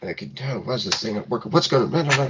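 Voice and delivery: put-on aimless, half-angry, quiet, grumbling old-man mutter. Acting out a grandpa at a computer, as asked: muttering quietly to himself. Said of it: "like muttering quietly to himself".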